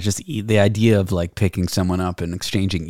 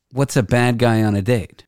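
ordinary talk, nothing marked

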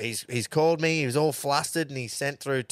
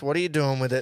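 ordinary talk

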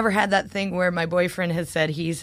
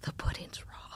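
muttered under breath, much quieter. Showing how they blurt a line from an imagined story, muttered under breath. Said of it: "I'll just be like under my breath".

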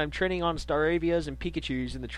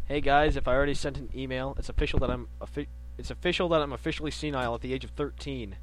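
usual speaking voice

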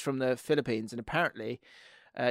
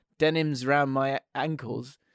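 ordinary talk, nothing marked

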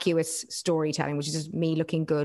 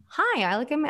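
fake, really bad, very high American accent; 10 semitones higher than usual. Mocking a type of influencer: really bad American accent. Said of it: "really bad American accent".

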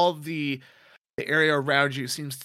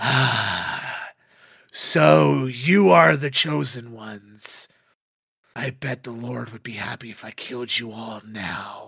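menacing, gloating demonic voice, drawn-out ah; 3 semitones lower, 4 dB louder than usual. Voicing a demon who greets the heroes in hell: gloating demonic villain voice. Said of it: "he smiles a big demonic-like smile".

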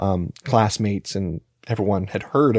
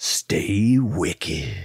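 eerie, haunting, spooky voice; 3 semitones lower than usual. Redoing an earlier sign-off when asked to: spooky voice. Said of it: "a spooky".

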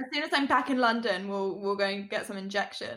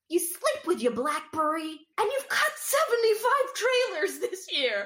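put-on annoying, irritating, pitched-up voice; 8 semitones higher than usual. Discussing characters whose voices are annoying, imitating Ethan's annoying voice. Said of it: "His voice is so annoying".

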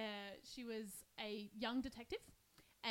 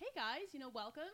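put-on, slightly nasal American accent, placed high; 4 semitones higher than usual. Asked to show the American accent she turns on at her retail job: put-on American accent. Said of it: "I'll just turn it on and be like".

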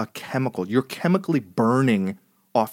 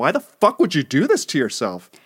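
swooping, scolding yelling; 3 semitones higher, 4 dB louder than usual. Retelling a painful shower moment, retelling yelling at himself. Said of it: "I'm like yelling at myself".

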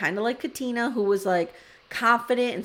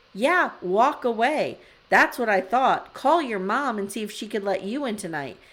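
ordinary delivery

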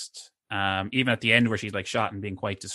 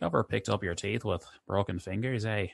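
low, thick, put-on West Belfast accent; 4 dB quieter than usual. Quoting a great line from a scene, in a low heavy West Belfast accent. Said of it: "his low kind of heavy West Belfast accent".

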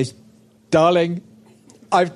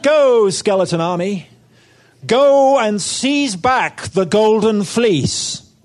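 put-on American accent, slow, drawn out, higher pitched; 5 semitones higher, 3 dB louder than usual. Telling a myth to children, voicing the king: put-on American accent. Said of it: "suddenly has an American accent".

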